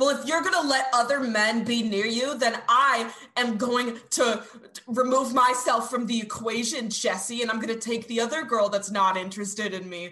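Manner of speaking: mock unhinged, furious, angry ranting outburst. Retelling how Alex went postal at Jessie: imitating a furious rant. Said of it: "Alex just goes fucking postal and he's like".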